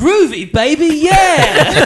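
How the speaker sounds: very high, groovy spy voice. Describing a short viral video of a man doing a voice, do an Austin Powers impression. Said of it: "Austin Powers impression".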